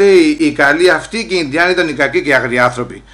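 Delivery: plain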